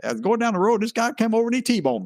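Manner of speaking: high-pitched put-on down-home country accent. Picturing the man from a law firm's commercial telling his story: typical country voice. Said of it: "typical country voice".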